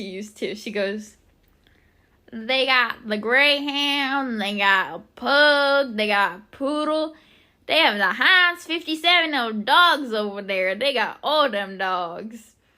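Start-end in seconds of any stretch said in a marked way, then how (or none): 2.3-12.5 slow, loud Southern drawl. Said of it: "That was the exact way she said it".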